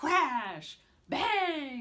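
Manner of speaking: very loud, high, big booming voice, "bang" stretched. Reader demonstrating voices for an action book, big voice. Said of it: "Try a big voice".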